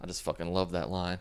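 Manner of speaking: ordinary talk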